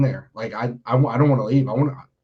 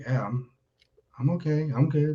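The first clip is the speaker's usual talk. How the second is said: mock super soft voice, quieter; 3 semitones higher, 6 dB quieter than usual. Retelling how a man answered when asked if he was okay, imitating a super soft voice. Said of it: "Like super soft, spoken word".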